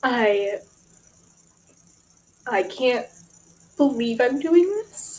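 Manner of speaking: choked-up, teary voice close to crying. Sharing news of moving to Nashville, on the verge of tears. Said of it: "I'm gonna cry".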